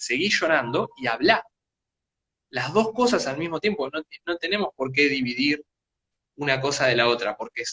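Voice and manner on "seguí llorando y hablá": plain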